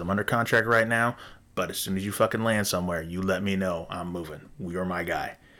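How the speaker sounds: usual speaking voice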